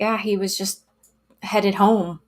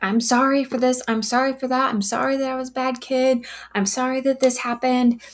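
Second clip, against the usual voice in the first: high, frantic, panicked rush of words; 5 semitones higher than usual. Retelling a son apologizing on the phone: imitating someone freaking out. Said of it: "freaking out".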